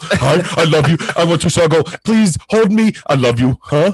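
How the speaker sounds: big, dim-witted, dopey dog voice. Speaker imagines the voice of their lab-mix dog Charlie: Charlie the dog's voice. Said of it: "I picture her as just this big dumb animal".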